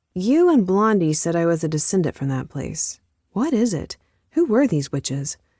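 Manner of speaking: plain reading voice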